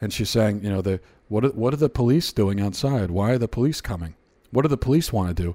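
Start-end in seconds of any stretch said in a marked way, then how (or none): 1.3-5.5 mock very calm voice, pitched lower. Describing a mother talking to her child as police wait outside, imitating a very calm voice. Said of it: "She's got this very calm voice".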